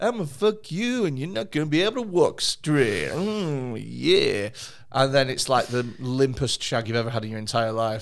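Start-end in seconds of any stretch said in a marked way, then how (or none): 0.0-4.5 cocky, overconfident bedroom voice, drawn-out "yeah". Speaker joking with a co-speaker, doing a Dunning-Kruger sex voice. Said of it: "That's my Dunning-Kruger sex voice".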